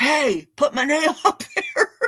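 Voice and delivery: high, laughing, mild mock yell. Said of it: "somebody yelled at me and said".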